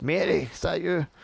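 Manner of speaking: put-on elderly man's voice. Narrating a door cracking open as someone inside the room calls out; old man voice. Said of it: "you hear an old man voice go".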